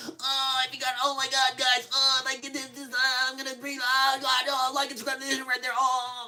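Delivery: very high, pained, hurting rambling babble. Imitating streamers pressing thumbtack-taped alligator teeth: imitating streamers in pain. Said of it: "So they sit there and be like".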